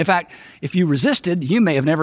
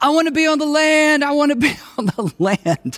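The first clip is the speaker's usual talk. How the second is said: acted, very high scream of a scared child; 10 semitones higher than usual. Retelling how a son clung to his swim instructor: imitating a child screaming. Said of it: "screaming at the top of his lungs".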